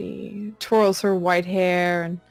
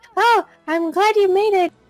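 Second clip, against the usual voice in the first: very high-pitched put-on voice; 12 semitones higher, 4 dB louder than usual. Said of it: "Her voice is so high".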